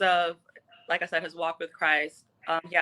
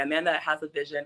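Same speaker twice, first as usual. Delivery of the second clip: usual speaking voice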